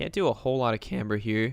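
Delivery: cracking voice. Talking through tuning options in a game: voice cracking. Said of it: "My voice just cracked".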